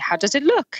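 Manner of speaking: put-on French-accented voice. Recounting a guy who walked up by the big waves, in a French accent. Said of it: "in this French accent?".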